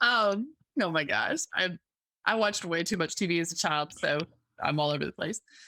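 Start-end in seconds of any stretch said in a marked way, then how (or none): 2.2-5.4 self-amused speech broken by laughter. Admitting to mixing metaphors while the other speaker laughs: laughing while talking. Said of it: "I'm laughing at myself".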